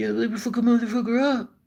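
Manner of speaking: soft-spoken, proud, rough mock tough guy voice. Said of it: "proud and rough and tough".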